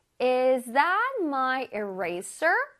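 very slow, careful, deliberate delivery. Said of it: "문장에서 다시".

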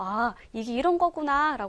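ordinary delivery

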